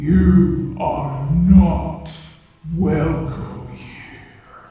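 deep, very loud booming rumble, "you" stretched out. Game master voicing a voice that fills the player's mind: loud rumbling voice. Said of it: "you hear a rumbling voice. Loud, filling your mind and composed of many different voices".

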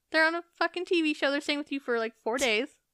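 high-pitched, fast, indignant retort. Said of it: "It's like".

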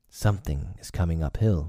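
ordinary delivery

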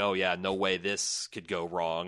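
mock-sarcastic, put-on sarcastic tone. Recapping a TV episode, quoting a character's reaction to Snuffles, mock-sarcastic. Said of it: "sarcastically looks at what's going on with Snuffles and is like".

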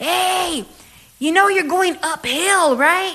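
high, yelled. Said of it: "they were, like, yelling".

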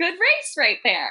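excited, very high-pitched, pleased exclamation.

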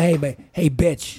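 slow, unhurried, lingering, each word stretched. Asked to do a Terrence Howard impression for the others: Terrence Howard voice. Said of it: "So can you do Terrence Howard now?".

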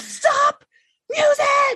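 mock, very high, really aggressive shout. Telling how they yell at the kitchen Google over loud music: mock-aggressive yelled command. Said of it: "Like just like really aggressively".

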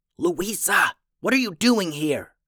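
shouted whisper, pitched high. Narrator voicing Simon, startled to find his little sister behind him: whisper-yell. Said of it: "Simon asked in a whisper yell".

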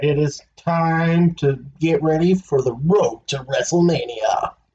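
slow movie-trailer announcer voice, words drawn out. Wrestling talk host kicks off the show's countdown in a movie voice. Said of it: "that was a good movie voice".

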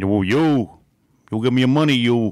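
put-on Italian godfather-style voice. Joking about De Niro playing Madoff, doing a De Niro Italian godfather impression. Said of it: "He's like an Italian godfather".

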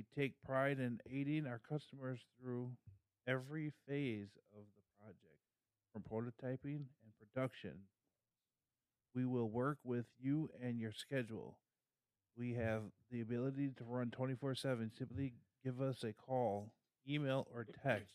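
flat, mechanical, robot-like monotone. Reading a company's advertising copy aloud while others listen: robotic monotone reading. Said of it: "That sounded like a robot".

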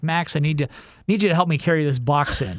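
usual speaking voice

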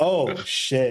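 normal talking voice

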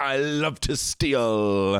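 high, very slow, little silly voice. Father retells his son refusing to give back stolen money: silly Billy voice. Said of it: "do it with a little silly Billy voice".

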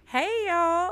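smiling while talking. Inviting listeners to join an event, smiling while talking. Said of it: "you can hear the smile all in my voice".

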